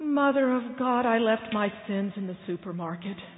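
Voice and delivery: acted-out, loud, anguished, despairing, agonized cry. Retelling a story, voicing the man behind the curtain, acting out an agonized voice. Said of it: "there's this agonized voice who says".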